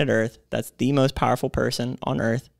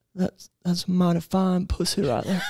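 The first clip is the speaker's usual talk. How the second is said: put-on, higher-pitched southern politician voice; 6 semitones higher than usual. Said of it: "in that exact tone of voice".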